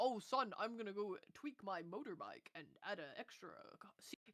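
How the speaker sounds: put-on American dad voice and accent. Imitating a typical dad doing DIY: put-on American accent. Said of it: "why did it sound like he became American there?".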